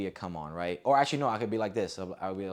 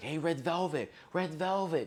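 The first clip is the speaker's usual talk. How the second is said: high, yelled call, calling out loud; 9 semitones higher than usual. A speaker recounts a woman calling out to get their attention: retelling a yell. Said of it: "Don't yell at me like that".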